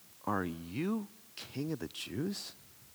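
acted, quiet, slow, drawn-out scornful voice. Retelling a governor's question to an accused man: imitating Pilate's scorn. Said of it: "there's scorn in this statement".

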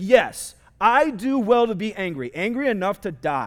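slow, sulky, petulant tone. Reading Scripture aloud, voicing Jonah's reply to God: petulant Jonah voice. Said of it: "That's how I imagine Jonah saying that".

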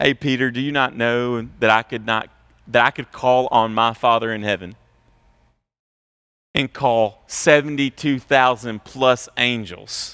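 calm, settled, unruffled, composed speaking voice. Retelling Jesus speaking to Peter and his followers: calm Jesus voice. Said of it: "Jesus was just kind of really calm in this moment".

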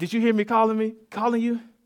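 high-pitched, suspicious tone. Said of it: "she'd come to the back and say".

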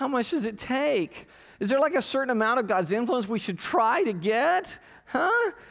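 whiny, high voice, each phrase rising up high. Voicing a question in a sermon: whiny Luke Skywalker voice. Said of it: "in your whiny Luke voice".

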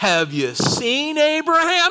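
play-acted cynical, very high, drawn-out jeering tone. A speaker retells the question people put to Jesus: quoting a sarcastic question. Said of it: "It was sarcastic".

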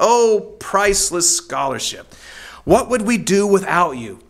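scoffing exclamation, dripping with sarcasm. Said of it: "he says sarcastically".

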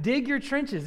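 sarcastic, mocking, goading, taunting tone. Explaining a verse, acting out the speaker's taunt: acting out sarcastic taunting. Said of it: "It's sarcasm. He's saying".

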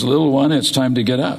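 plain

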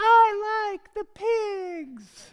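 put-on shrill, very high, very loud, drawn-out little-girl voice. Speaker retells the girls answering him about the Peppa show; little girl voice. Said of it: "these little girl voices would go".

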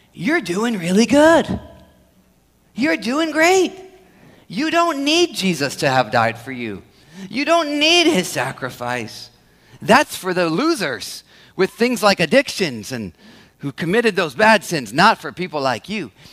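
hushed, soft, close half-whisper. Voicing the lie of commendation, imitating Satan half-whispering. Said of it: "This is where Satan whispers in our ears".

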